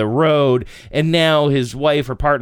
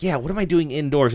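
usual speaking voice

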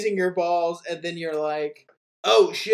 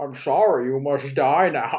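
low, menacing movie-villain voice; 4 semitones lower than usual. Mocking a QAnon cop, quoting a movie villain: Bane impression. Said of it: "Bane is just like".

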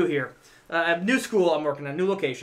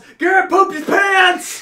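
put-on high, shrill, very loud shrieking child yell; 13 semitones higher, 9 dB louder than usual. Retelling how a little kid yelled as a mom came in: imitating a kid yelling. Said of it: "and he yells".

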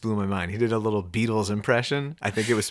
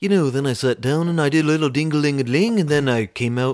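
put-on Liverpool accent, higher and louder; 5 semitones higher, 5 dB louder than usual. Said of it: "[name] does an amazing [name] impression".

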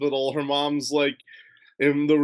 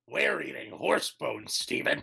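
hushed, breathy character voice; 2 semitones lower, 7 dB quieter than usual. Pitching a fan parody idea, the speaker voices Connie in a Nappa voice. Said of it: "That was a good impression".

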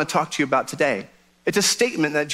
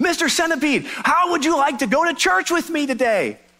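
loud, very high-pitched hollering yell; 11 semitones higher than usual. Telling a joke, calling to a centipede in a box: yelling. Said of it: "he yells next to the box".

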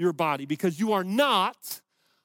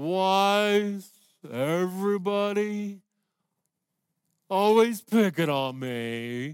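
very slow, mopey delivery with "me" long and drawn out. Imitating people who are negative all the time: mopey Eeyore voice. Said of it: "They're like Eeyore".

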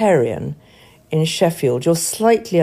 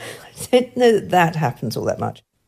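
ordinary talk

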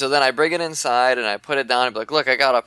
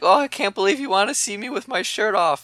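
put-on sweet, innocent tone, pitched up; 8 semitones higher than usual. Acting out the woman in a gross picture: mock-innocent voice. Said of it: "she looks like she's so innocent".

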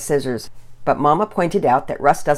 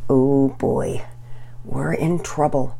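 soft, quiet, low voice; 2 semitones lower than usual. A child left behind with a sibling after the parents leave, said softly. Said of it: "Pearson said softly".

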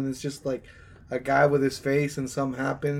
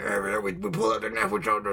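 put-on British tough guy accent, pitched up; 6 semitones higher than usual. Retelling a comedian's joke about The Expendables: Jason Statham accent. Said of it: "he's doing like a Jason Statham accent".

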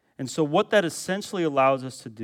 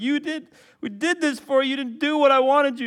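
mock whiny child voice, much higher; 11 semitones higher than usual. Acting out children complaining to each other: mock-whiny child. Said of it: "they're whiny".

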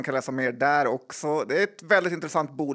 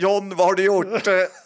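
mock shout, higher and louder; 5 semitones higher, 5 dB louder than usual. Quoting what your wife shouted from the kitchen: retelling a shout from the kitchen. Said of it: "Min fru skrek från köket så här".

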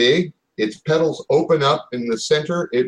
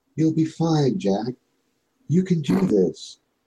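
small, little female voice; 4 dB quieter than usual. Narrator voicing a voice the player hears in the game, little female voice. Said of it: "You hear a little female voice that says".

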